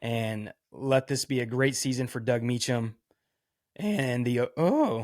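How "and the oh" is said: voice breaking and cracking mid-word. A former Oklahoma State player hoping the team has a great season: voice cracking. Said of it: "my voice cracked really good there".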